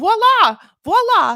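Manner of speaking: belted "voila" in high, loud, shrill Lebanese accent. Saying a word one now says everywhere, in a lebanese accent. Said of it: "I'm now saying it like a Lebanese person".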